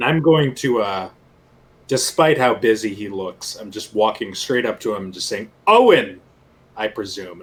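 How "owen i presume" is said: raised, swooping, haughty and pompous. Greeting a busy-looking man, trying to one-up his pompousness, pompous tone. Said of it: "I'm trying to like out pompous him".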